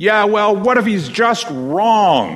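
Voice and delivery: play-acted crotchety shout, very high, "wrong" drawn out. Recalling a heckler at the back of the hall, imitating a cranky shout. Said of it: "a cranky voice from the back of the hall that shouted".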